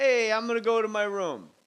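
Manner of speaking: put-on Brooklyn accent. Retelling a story about a second Chuck, voicing him with a Brooklyn accent. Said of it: "why he's a Brooklyn accent".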